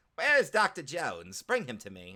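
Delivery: bad, hammy put-on villain voice with swooping pitch. Speaker tries a villain line while chatting about movies, horrible Skeletor impression. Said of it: "horrible Skeletor impression".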